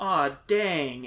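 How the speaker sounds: put-on American accent. Retelling a character's line about the female workers: american accent. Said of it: "in an A-, American accent".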